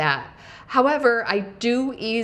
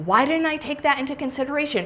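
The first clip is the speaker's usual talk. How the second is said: high, fast, self-scolding tone. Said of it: "I started berating myself".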